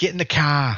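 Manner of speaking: put-on local Massachusetts accent. Showing how one accent differs from a Californian one, put-on Massachusetts accent. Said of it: "Massachusetts is".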